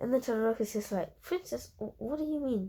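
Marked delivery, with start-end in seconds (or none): 1.2-2.7 small voice, higher and quieter. Retelling a story about Deku, the speaker voices Todoroki in a small voice. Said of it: "in a small voice".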